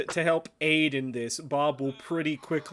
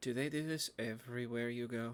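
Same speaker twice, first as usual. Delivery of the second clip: barely audible, hushed half-whisper; 3 semitones lower, 12 dB quieter than usual. Narrator voicing Sachiko, who leans over to half-whisper in your ear, half-whispering. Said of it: "so she just whispers".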